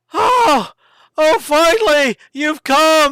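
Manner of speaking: put-on very high, loud, eager, slightly drunk voice. Narrator voicing a man rushing out to greet the adventuring party, a little drunk, eager greeting. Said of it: "he rushes out, and his cheeks are rosy, probably a little bit drunk".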